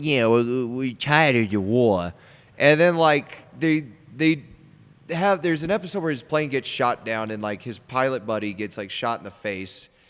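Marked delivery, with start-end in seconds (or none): 0.0-2.1 slow, very bad New York accent. Describing a character in a show, quoting him in the worst New York accent ever. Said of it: "he's got the worst like New York accent ever".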